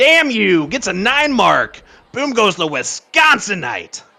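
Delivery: gravelly, rough-edged, raspy growling voice. Calling out a score, delivered in a raspy growling voice. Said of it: "little like raspy growl kind of version of it now".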